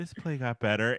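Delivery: soft half-whisper with no voice. Retelling a mom's remark during a play: imitating a half-whisper. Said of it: "She whispered it".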